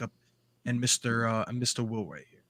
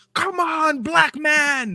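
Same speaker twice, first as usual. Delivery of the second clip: shrill, very high, loud cheering scream; 6 dB louder than usual. Imagining viewers walking into the stream, the speaker does a mock scream. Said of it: "they hear me screaming like".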